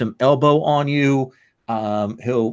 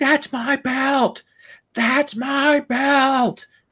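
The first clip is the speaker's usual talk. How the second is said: shrill, very high, all-out top-of-lungs scream; 13 semitones higher than usual. Narrating Percolator on a stretcher being rolled away, Percolator screaming at top of lungs. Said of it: "he is screaming at the top of his lungs".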